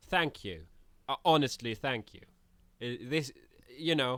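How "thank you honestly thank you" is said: sarcastic, insincere delivery with swooping tone. Thanking a rival camper in character after being purified: sarcastic. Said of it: "You still sound sarcastic".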